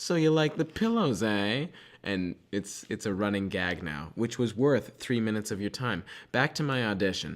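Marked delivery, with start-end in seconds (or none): 0.0-1.7 high, sweet, passive-aggressive voice. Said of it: "she's gonna say something really passive aggressive".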